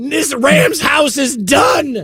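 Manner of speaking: mock kid voice, slow, high and declaiming.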